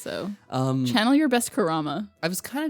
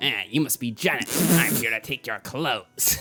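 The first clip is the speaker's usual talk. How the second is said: troll-like voice, much lower; 8 semitones lower than usual. Doing a character's line to Janet in a troll-like voice. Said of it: "He's not a troll. Or like a goblin".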